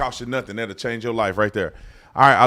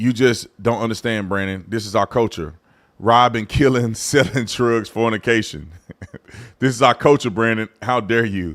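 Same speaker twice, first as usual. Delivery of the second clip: ordinary delivery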